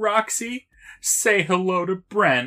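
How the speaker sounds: play-acted, high, loud, on the verge of tears. Retelling a scene, the speaker acts out Sam's line almost in tears. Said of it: "almost in tears".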